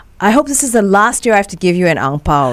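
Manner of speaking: ordinary talk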